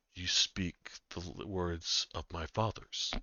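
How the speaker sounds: massive creature voice, whispering. Speaking as a large beast answering the player in Draconic: large beast whispering. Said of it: "whisper back to you in".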